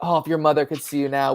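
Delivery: put-on disappointed tone. Retelling a father's line from the movie: imitating a disappointed father. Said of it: "with such disappointment".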